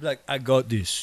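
put-on Cameroonian accent. Acting out what a man would say for the others, in a put-on Cameroonian accent. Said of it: "That was a really good Cameroonian accent".

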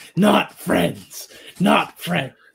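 rough, guttural monster mumble. Voicing a creature as it smashes things, guttural mumbling. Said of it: "hearing it like gutturally trying to, it's mumbling".

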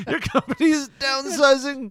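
put-on very high-pitched voice with Indian accent. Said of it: "I don't know why he's, like, Indian".

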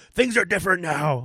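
mock unhinged shouting rant, very high and crazed. Retelling a comedian's bit about the shutdown: imitating Kyle O'Reilly yelling in his crazy voice. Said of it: "he get in his crazy voice, start yelling".

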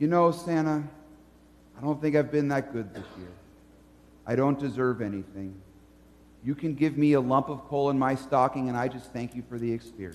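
mock very low, quick, pious fake-humble murmur. Acting out a person answering Santa's offer: mock humble, pious tone. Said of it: "You would sound so humble, and so pious".

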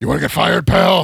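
very loud, rough put-on voice. Asked for a current-day impression, doing a Vince McMahon impression. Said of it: "do your best current day Vince McMahon impression".

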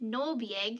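strange extraterrestrial voice. Retelling what one of them said while she was on the table, in an alien voice. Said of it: "that's my best alien talk".

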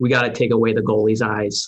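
put-on, dead-serious, intense Boston accent. Retelling a talk about a team missing the net, the speaker quotes Bob in his intense Boston accent. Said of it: "in his Boston accent".

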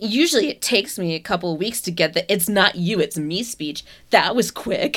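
imitated, mock-snotty tone. Speaker recapping a man harassing a woman who said no to a date, mimicking Ryan's snotty tone. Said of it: "with this really snotty tone of voice".

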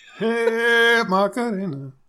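shouting. Showing how to yell at the end of the sermon: yelling. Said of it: "that's when you just yell it".

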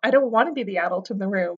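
ordinary delivery

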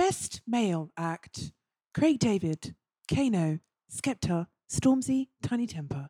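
put-on awards-ceremony announcer voice. Reading out Mobo nominations for the others, in a put-on announcer voice. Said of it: "Did you like my voice there?".

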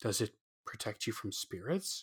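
hushed, very quiet, barely above a whisper. The narrator asks the man showing his necklace, in a hushed voice. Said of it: "I asked in a hushed voice".

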